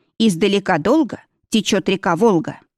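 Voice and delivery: ordinary delivery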